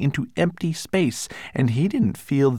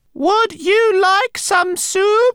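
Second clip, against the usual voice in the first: very high, oddly loud, deliberate, drawn out; 6 dB louder than usual. Narrator reads Lola's sudden question, spoken in a strangely loud voice. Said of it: "Lola asked in a strangely loud voice".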